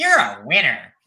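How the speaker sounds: put-on cute little voice, very loud. Suggesting a comeback for when someone annoys you, in a Jen voice. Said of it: "you got to do it in a Jen voice".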